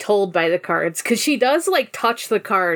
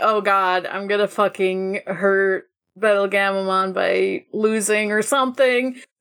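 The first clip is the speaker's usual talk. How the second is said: ordinary talk, nothing marked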